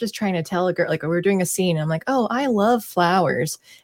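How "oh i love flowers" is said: slow, sarcastic line reading. Retelling an acting class scene, the speaker redoes the line, retelling sounding sarcastic. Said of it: "I kept sounding sarcastic".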